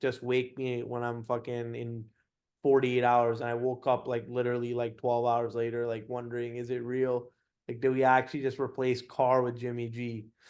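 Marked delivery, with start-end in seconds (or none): none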